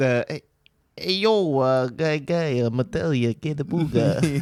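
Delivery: put-on New York accent, fast slick patter. In an improv scene, a player voices a nineties crypto bro, New York accent. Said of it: "and a New Yorker?".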